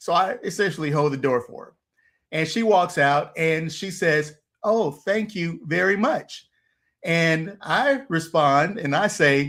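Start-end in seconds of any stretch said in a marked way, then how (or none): 4.6-6.5 prim, formal, carefully enunciated, high-pitched delivery. Retelling how a lady thanked him for holding the door: formal, clearly enunciated thanks. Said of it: "she was so formal in saying".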